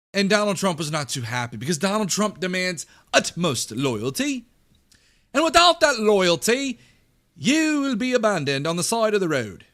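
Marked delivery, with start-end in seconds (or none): 3.1-9.5 loud, laid-on, put-on British accent. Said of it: "I just did a British accent".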